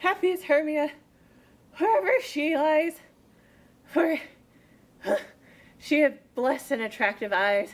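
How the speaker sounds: breathless, winded, panting speech. Actor in a stage play, playing a character worn out from a chase, out of breath. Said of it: "I am out of breath in this fond chase".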